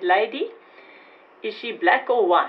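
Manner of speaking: put-on very strong Afrikaans accent. Retelling what the man at the hospital reception desk said to her, in a very strong Afrikaans accent. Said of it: "in a very strong Afrikaans accent".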